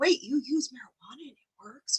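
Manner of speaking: soft, hushed stage whisper. Retelling what a police officer asked: imitating a half-whisper. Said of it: "whispering it".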